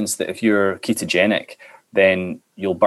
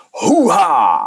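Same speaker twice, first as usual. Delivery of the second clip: exclaimed hoo-ha, raised pitch; 8 semitones higher, 4 dB louder than usual. Asked for an impression, doing the actor's famous film exclamation: Al Pacino impression. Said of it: "him from Scent of a Woman where he goes".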